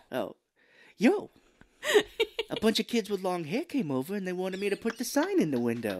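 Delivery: fake elderly woman voice. Redoing his mother's quote after choosing which voice: Estelle voice.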